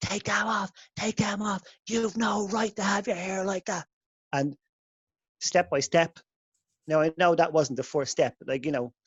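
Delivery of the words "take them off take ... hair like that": all-out screaming freak-out rant. Retelling a college girl screaming at a guy over dreadlocks: imitating someone screaming. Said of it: "screaming like".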